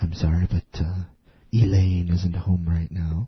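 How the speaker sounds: very deep, low, put-on seductive sexy voice. Joking about recording answering machine messages: imitating Jeff's sexy voice. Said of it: "sexy voice".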